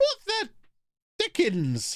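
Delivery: voice swooping, sudden octave jump, very high. Reacting to a new player in the squad: voice jumping up an octave. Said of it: "before my voice went up an octave".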